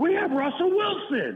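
mock very high, shrill, thrilled, fan-like yell. Retelling a coach's press conference line, imitating a yell. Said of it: "and he yelled out".

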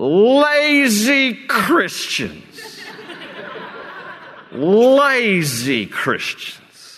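put-on very slow, slurring, drawn-out lazy Southern drawl. Imitating a man who talks in a slurred southern drawl. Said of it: "he has this slurred kind of southern drawl, and he goes".

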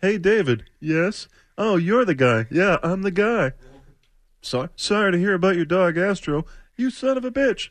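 high, mocking, bad impersonation voice. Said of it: "mocking him with that bad impersonation".

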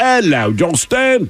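put-on English accent.

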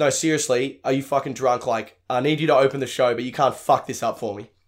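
mock aggressive delivery. Retelling how a promoter asked for a favor: imitating Josh Wade's aggressive demand. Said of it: "the most aggressive way anyone's ever asked me for a favor".

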